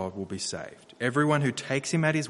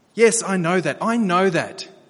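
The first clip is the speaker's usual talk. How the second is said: half-offended, almost insulted, raised and high-pitched; 7 semitones higher, 7 dB louder than usual. Speaker retelling how he answered their instruction, imitating an almost insulted tone. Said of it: "In an almost insulted tone".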